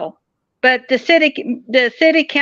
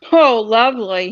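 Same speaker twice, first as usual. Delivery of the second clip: usual speaking voice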